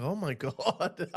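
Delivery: put-on starstruck, dazzled, mesmerized, awestruck wonder. Retelling how a man reacted on camera: imitating someone mesmerized. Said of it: "He's mesmerized. He's like".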